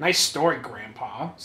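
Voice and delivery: low, dorky nerdy character voice. Player repeating his character's reply to an old man, in a nerdy voice. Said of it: "I'm just a nerd voice".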